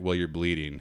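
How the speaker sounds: low, dead flat, matter-of-fact deadpan. Retelling how a friend reacted after running down the hill, imitating Nadia's deadpan. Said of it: "Nadia was so deadpan about everything".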